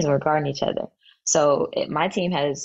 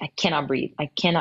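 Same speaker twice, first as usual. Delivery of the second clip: put-on panicked, tearful crying. Retelling a 2 a.m. call to a best friend, imitating own panicked crying. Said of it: "and I'm crying".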